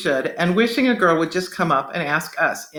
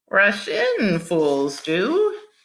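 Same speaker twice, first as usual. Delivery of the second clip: weird, squeaky, slow, swooping sing-song voice; 3 semitones higher than usual. Narrator reads Dwight voicing his finger puppet for Kellen, in a weird squeaky voice. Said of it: "made this weird squeaky voice".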